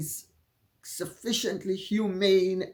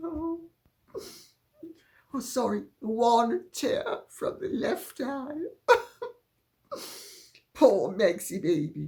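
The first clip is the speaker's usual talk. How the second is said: words broken by laughter, high and swooping; 5 semitones higher than usual. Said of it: "Sorry for laughing".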